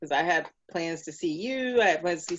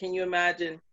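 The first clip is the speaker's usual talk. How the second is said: ordinary delivery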